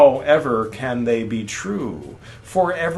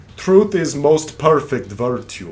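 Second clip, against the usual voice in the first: bad, terrible put-on fake Russian accent. Asking if they are Russian, then saying the line in a terrible Russian accent. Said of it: "That was a terrible Russian accent".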